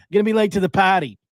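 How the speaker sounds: put-on, casual New York accent. The speaker repeats his own ad line, in a put-on New York accent. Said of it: "started talking like a New Yorker".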